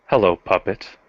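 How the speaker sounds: as sinister and menacing as possible. Voicing a character with his fangs out, in a sinister voice. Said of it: "with as sinister voice as he can manage say".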